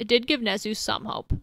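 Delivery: plain reading voice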